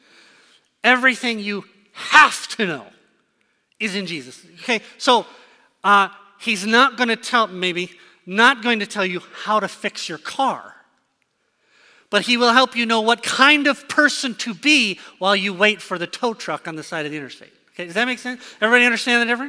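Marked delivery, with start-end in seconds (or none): 0.8-4.4 hard stress on the word "everything". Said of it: "with the emphasis on the right word".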